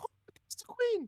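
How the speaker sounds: very high, excited squeal. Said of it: "really excited".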